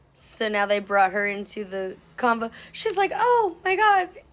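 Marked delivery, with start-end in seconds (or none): 3.2-4.1 high, put-on, feigned surprise. Retelling what a contestant just said on screen: imitating Sage acting surprised. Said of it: "She's acting like she's surprised".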